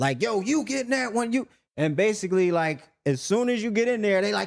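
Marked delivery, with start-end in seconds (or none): 0.2-1.5 mock high, barking, hollering guard shout. Retelling how guards at the showers spoke: imitating guards screaming. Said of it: "And they screaming".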